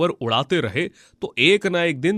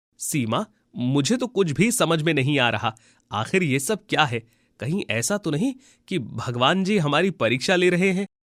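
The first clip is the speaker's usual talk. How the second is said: usual speaking voice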